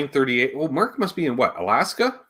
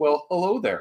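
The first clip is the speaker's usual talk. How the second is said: mock reproachful, scolding tone; 4 semitones higher than usual. Retelling joining the stream late, imitating Charles's scolding greeting. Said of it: "it's the delivery that makes you feel like you got in trouble".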